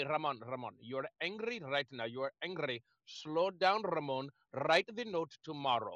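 put-on beautiful Indian accent, spoken low. Quoting advice a man always gave him, imitating Mr. Chidam Baranathan's Indian accent. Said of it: "in his beautiful Indian accent".

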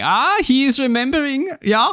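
very high, fake put-on German accent. Retelling a trailer line: Neil Patrick Harris mock German accent. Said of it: "Neil Patrick Harris in his mock German accent going".

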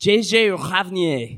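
speaking with retching, gagging sounds. Asked why they keep repeating a woman's full name, saying it like throwing up. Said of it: "you sound like you're throwing up".

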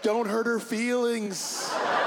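put-on high, slow child voice.

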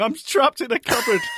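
put-on panicked voice.

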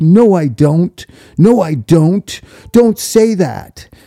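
slow, mock defensive, insistent tone. Retelling how a man reacted when asked about a crush, mock-defensive denial. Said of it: "He got so defensive".

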